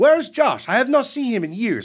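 horrible put-on Brazilian accent. Echoing the coach from a friend's story asking after a student, horrible Brazilian accent. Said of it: "It's a horrible Brazilian accent".

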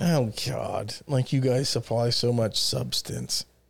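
resentful, bitter half-whisper, breathy and low. Replying to a jab about not wanting substance in relationships, bitter. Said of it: "You sound so bitter".

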